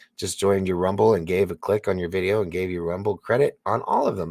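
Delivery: ordinary talk, nothing marked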